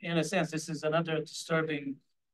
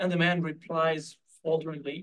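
ordinary talk, nothing marked

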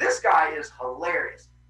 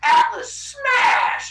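very high, loud, put-on giant yell; 5 dB louder than usual. Retelling how Atlas went around smashing gods: imitating Atlas yelling. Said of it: "He went around just yelling".

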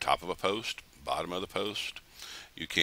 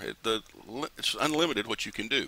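stuttering excitedly, tripping over words, pitched higher; 3 semitones higher than usual. Showing how to make unlimited plugins with the software, stuttering with excitement. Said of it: "I'm stuttering around here because I'm very excited".

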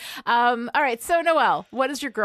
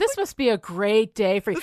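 mock-sarcastic, put-on sarcastic tone. Quoting a man's congratulations that came with condescension in his voice: mock-sarcastic impression. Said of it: "He's totally sarcastic".

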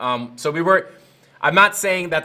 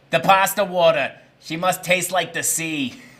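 put-on Italian grandmother voice. Reading out a commenter's message, in an Italian grandmother voice. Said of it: "uses Italian grandmother voice".

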